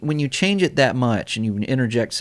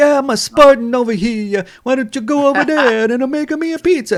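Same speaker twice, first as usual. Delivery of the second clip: very high, loud, badly faked Italian accent; 7 dB louder than usual. Imitating the game's male character: cheap version of Mario voice. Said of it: "he sound like, like a cheap version of Mario".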